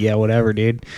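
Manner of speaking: usual speaking voice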